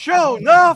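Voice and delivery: acted crowd shouting. Speaker retells how a whole floor shouted back at a man, imitating a crowd shouting. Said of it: "the entire floor that could hear him shouted out".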